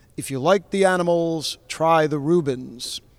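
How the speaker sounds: put-on broadcast announcer delivery. Quoting a line about a band, full announcer voice. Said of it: "I'm going to do my full announcer voice".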